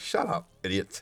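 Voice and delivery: put-on, dry, dismissive, breathy, sarcastic whisper. Retelling how a chatter flames the other chat: imitating Mark's sarcastic put-down. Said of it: "He's just the most sarcastic, uh, guy ever".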